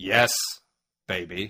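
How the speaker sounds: deadpan British agent voice. Demonstrating another person's take on the character, flat Austin Powers impression. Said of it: "Claire's Austin Powers impression is this".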